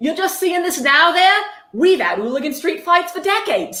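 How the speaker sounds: deliberately bad English accent. Quoting an Englishman's reply when locals were asked, in a bad English accent. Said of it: "I'm going to do a bad English accent".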